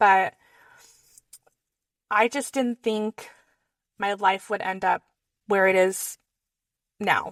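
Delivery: voice holding back tears. Talking about where life ended up, holding back tears. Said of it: "I'm gonna try not to cry".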